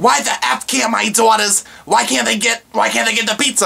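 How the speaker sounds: acted high, rough-edged, furious raging outburst. A manager retelling a caller on the phone, imitating a woman screaming. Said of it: "And she is just screaming".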